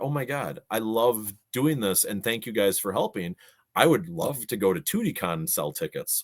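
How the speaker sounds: ordinary delivery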